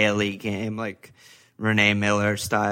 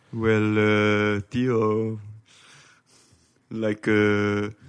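very slow, hesitant halting start, each uh drawn out. Showing how to do an Arsene Wenger impression: Arsene Wenger impression. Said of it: "that's how you do an Arsene Wenger impression".

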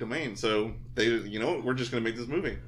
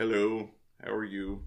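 bland, expressionless monotone at level pitch. Describing how bland he seemed in the role, imitating a flat monotone. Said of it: "He didn't raise or lower his voice".

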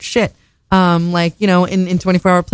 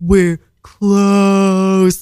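mock screaming in slow motion. Retelling a guy behind the glass of a closed shop, imitating slow-motion screaming. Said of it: "like screaming, but also slow motion".

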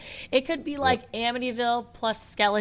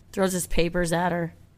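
ordinary talk, nothing marked

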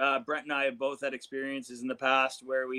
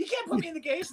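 put-on yell, very high and shrill. Acting out Charlie refusing to get in the case: imitating Charlie yelling. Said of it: "I'm sorry for yelling".

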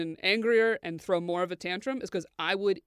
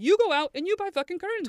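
put-on very high, shrill yelling rant with laughter; 10 semitones higher than usual. Retelling a screaming match over curtains, retelling a yell. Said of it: "I'm yelling and laughing".

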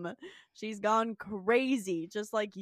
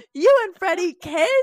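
very loud, shrill, horrified shriek; 9 semitones higher, 13 dB louder than usual. Retelling a scene from a show: imitating a horrified scream. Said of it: "She screams".

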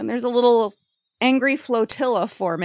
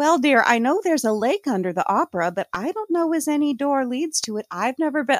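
put-on Midwestern office lady voice; 2 semitones higher than usual. Picturing how the concierge lady answers: imitating a Ferris Bueller secretary. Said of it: "That's who I picture saying".

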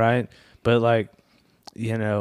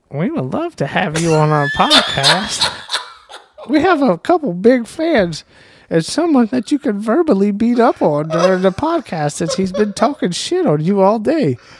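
very high, loud, imitated put-on voice; 10 semitones higher, 7 dB louder than usual. Reading aloud a message the other speaker wrote: imitating the other speaker's voice. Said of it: "read it in the voice that you hear me in".

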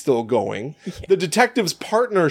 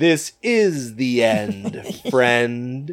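very slow, strange, deliberate, drawn-out delivery; 3 semitones lower than usual. Retelling a movie scene where the boy strikes a match: imitating Andy saying it slow and weird. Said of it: "he says it so slow and weird".

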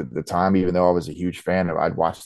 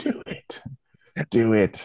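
very slow, coaxing, tempting devil voice; 4 semitones higher than usual. Retelling a guy urging over the shoulder at a toy show: imitating Glenn as shoulder devil. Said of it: "It's just like devil, like, right here".

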